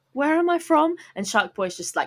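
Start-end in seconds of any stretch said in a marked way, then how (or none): 0.1-0.9 put-on girl voice. Imitating Lava Girl asking where she comes from: imitating Lava Girl. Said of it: "every scene was just her going".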